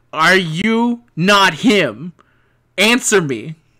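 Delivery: loud, angry shouting. Quoting a character confronting Gintoki: Shinpachi yelling. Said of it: "when he's yelling at him".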